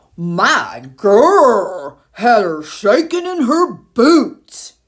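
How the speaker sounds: growled, bear-like voice. Reading a story aloud, voicing the bear arguing with the lion, growled. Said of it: "growled the bear".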